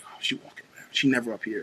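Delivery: hushed, breathy, gossiping whisper. Retelling how staff whispered when the principal walked around: imitating whispering coworkers. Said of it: "we would all start whispering".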